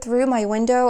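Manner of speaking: ordinary talk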